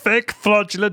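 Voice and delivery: high German-accented voice. Repeating the judge's words, now in a German accent. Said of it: "but in a German accent".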